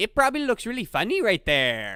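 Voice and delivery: bad, sing-song put-on Chinese accent. Retelling what a man at the next urinal said, horrible Chinese accent. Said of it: "that was a horrible Chinese accent".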